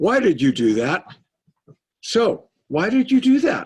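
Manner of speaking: loud, high, accusing, demanding prosecutorial tone. Contrasting two kinds of curiosity, showing prosecutorial curiosity. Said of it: "Prosecutorial curiosity is".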